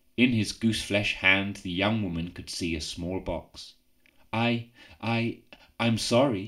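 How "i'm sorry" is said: halting, stuttered, stammering words. A young woman answers an old man at his door, stuttering. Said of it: "she stuttered".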